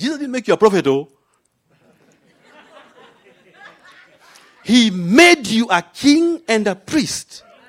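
put-on Nigerian English accent, preacher-like delivery. A speaker addressing listeners switches to speak like a Nigerian, Nigerian accent. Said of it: "Let me speak like a Nigerian".

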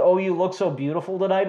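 ordinary talk

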